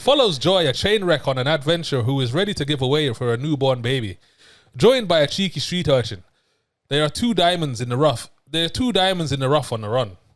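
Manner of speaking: loud, fake put-on Irish accent. Reading a plot summary aloud to the other speaker, putting on an Irish accent. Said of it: "I need to get in my Irish bag".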